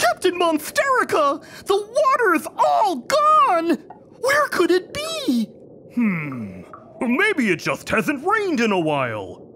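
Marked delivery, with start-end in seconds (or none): 0.0-5.5 shocked gasp, much higher pitch. At the beach, a character calls out to the captain; gasping in shock.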